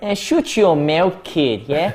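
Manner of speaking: put-on Irish accent.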